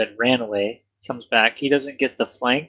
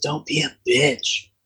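jabbing stage whisper; 3 semitones higher than usual. Voicing a character who speaks into a player's ear from behind: Eldos whispering. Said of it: "Eldos whispers in your ear from behind".

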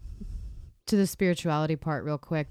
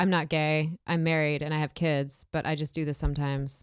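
normal talking voice

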